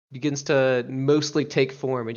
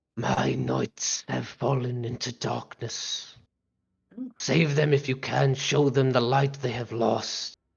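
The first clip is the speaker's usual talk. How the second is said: halting, clunky, hissing creature voice. Voicing a being rising through magma as it addresses you, hissing magma creature voice. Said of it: "it hisses as it addresses you".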